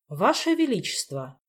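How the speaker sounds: loud, faltering, slightly trembling voice. The court magician finally calls out to the king: slightly shaky, loud voice. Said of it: "слегка дрожащим голосом громко произнес".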